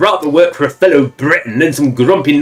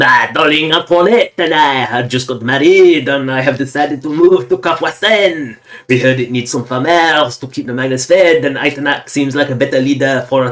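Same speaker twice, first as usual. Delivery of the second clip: bad, terrible put-on French accent. Reading the text aloud: terrible fake french accent. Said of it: "I'm going to read it gonna like it was with my terrible fake French accent".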